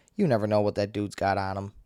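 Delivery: plain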